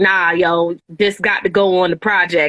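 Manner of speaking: normal talking voice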